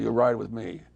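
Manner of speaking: plain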